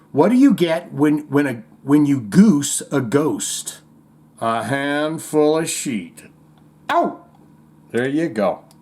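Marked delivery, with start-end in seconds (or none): none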